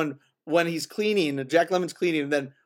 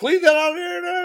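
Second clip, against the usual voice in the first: mock yelling at a much higher pitch; 13 semitones higher, 4 dB louder than usual. Quoting a favorite movie scene where one man yells at another about food, imitating someone yelling. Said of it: "when he's yelling at him about the food".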